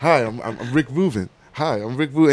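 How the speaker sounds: acted quiet, gentle voice. Retelling someone walking up the yard to greet: imitating Rick Rubin greeting. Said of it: "You just see his ass walking up".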